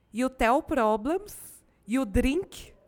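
put-on Russian accent on English words. Recounting a scene, a speaker quotes a crazy Russian character in an imitated Russian accent. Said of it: "eu estou imitando, inclusive, o sotaque dela".

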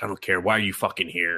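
put-on gruff old man voice. Recapping a show, the speaker imitates its grandpa character, a gruff old man. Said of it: "he's like the gruff old dude".

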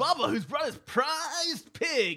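very high morning-show radio DJ patter. Two speakers riff on a made-up morning show bit: morning radio DJ voice. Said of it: "that totally sounds like a morning DJ show".

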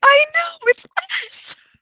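acted super excited, very high-pitched. Retelling a character's reply about an attack: imitating someone super excited. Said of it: "super excited where she's like".

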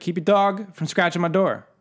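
high-pitched, loud hollering. Imagining the other speaker's dog scratching at the door, the speaker is acting out yelling. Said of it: "I'd have to yell at you".

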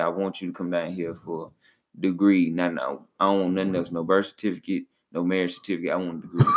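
normal talking voice

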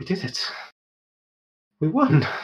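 badly hurt, failing voice, weak and high. Voicing a badly hurt ally pushing herself up: weak, injured voice after battle. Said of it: "She's in a horrible state".

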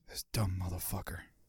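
very quiet, hushed whisper close to the mic. Retelling what a guest said into the mic while editing: imitating someone whispering. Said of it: "He was just whispering into the mic".

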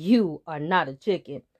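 put-on deep old eagle voice, mid-laugh. Narrator reads the old eagle answering the young eagle Turk, laughing, deep eagle voice. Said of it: "The old eagle laughed in his deep eagle voice".

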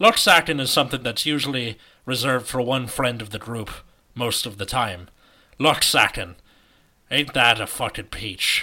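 terrible fake Irish brogue. Reading a podcast sponsor message, in a terrible irish accent. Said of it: "I'm doing this terrible Irish accent".

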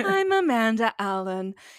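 soothing, mock radio host voice.

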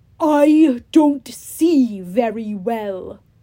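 loud, growling monster voice. Narrator voicing Polyphemus speaking to the unveiled Grover, growling. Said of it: "he growled".

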